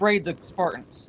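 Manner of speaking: ordinary delivery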